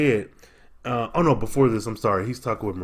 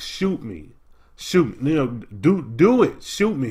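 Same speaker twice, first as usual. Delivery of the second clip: mock, subdued, mild shouting, slow and drawn out; 3 semitones higher than usual. Recounting a scene, acting out one man yelling at another: retelling a scream. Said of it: "He's screaming at him".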